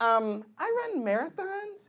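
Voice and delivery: put-on high girlish voice.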